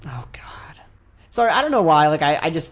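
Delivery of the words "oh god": breathy, fed-up, exasperated sigh, whispered. Reacting to news that a company is making a game: exasperated sigh. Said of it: "Your exasperated sigh".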